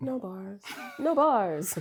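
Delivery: playfully mocking, coy, flirty, sarcastic tone. Speaker shows how they keep saying a phrase, flirty, sarcastic. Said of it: "the flirty, sarcastic thing".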